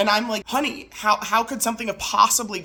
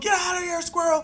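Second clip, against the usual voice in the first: put-on, high, raised hollering shout; 9 semitones higher than usual. Retelling how her husband shouted at a squirrel in the attic: imitating husband shouting. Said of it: "shouting through the attic".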